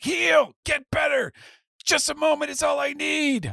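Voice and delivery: very high, creaky, rough shouting voice. Narrating a stabbed character, yelling at himself. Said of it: "he's like yelling at himself now".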